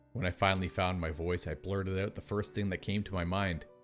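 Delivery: plain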